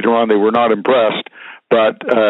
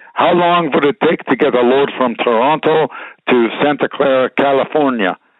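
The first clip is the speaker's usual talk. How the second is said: put-on thick, laid-on European accent; 3 semitones higher than usual. Retelling a business call, the speaker quotes an Austrian or German man in a thick European accent. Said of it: "in his thick European accent".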